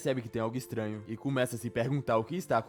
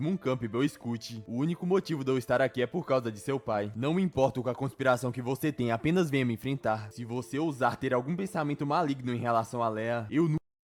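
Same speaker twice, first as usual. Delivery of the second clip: ordinary delivery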